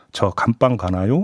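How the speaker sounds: usual speaking voice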